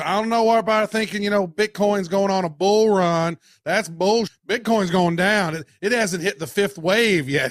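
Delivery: southern drawl, North Carolina style. Retelling what a man said in his episodes about a week ago, imitating a north carolina southern drawl. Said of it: "kind of a southern drawl from like North Carolina".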